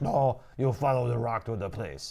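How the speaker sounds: bad put-on accent drifting toward Russian. Parodying game dialogue between Desmond and Ezio, voicing Ezio: bad accent sounding Russian. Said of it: "you went right into Russian".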